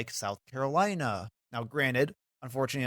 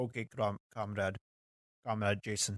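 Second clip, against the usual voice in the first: soft, horrible, bad put-on Russian accent; 3 semitones lower, 6 dB quieter than usual. Joking in conversation with the other speaker, putting on a horrible Russian accent. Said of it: "That's my horrible Russian accent".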